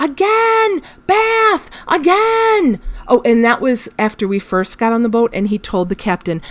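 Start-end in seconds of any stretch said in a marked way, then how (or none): 0.0-2.8 mock very high, squealing, excited little kid yelling. Recounting how he shouted at the boat captain each time he got soaked: retelling a shout. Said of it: "he's shouting at the captain".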